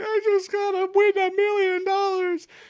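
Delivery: very high, whiny, crying voice. Imitating Rizzo's classic line from the episode, mock crying whiny voice. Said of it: "his classic crying, whiny voice of like".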